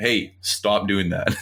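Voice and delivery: slow, stern, measured dad voice.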